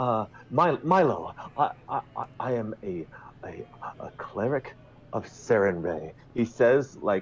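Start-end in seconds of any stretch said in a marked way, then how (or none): 0.0-6.1 mock-proud, prideful grand manner, put on. Retelling how a cleric character introduced himself to milo: mock-proud declaration. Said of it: "with such pride".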